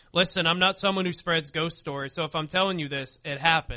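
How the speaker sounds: ordinary delivery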